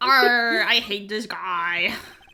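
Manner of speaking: put-on pirate voice. Commenting on a game character while playing: pirate voice. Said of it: "Made a pirate voice".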